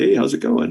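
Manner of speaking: easygoing, casual, offhand passing tone. Narrator voicing frog-like creatures on the shore waving up to you, casual greeting. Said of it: "kind of casually".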